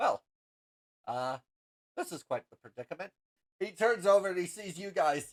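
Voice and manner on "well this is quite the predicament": low mutter under the breath. Game master voicing a character latched onto the ceiling, muttering to himself. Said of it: "he mutters to himself".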